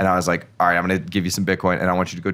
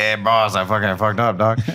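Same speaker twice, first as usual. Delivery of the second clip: put-on English in a Mexican accent throughout. Retelling a story about an employee, the speaker acts out his reply to the boss, imitating a Mexican accent. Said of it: "He has got a Mexican accent".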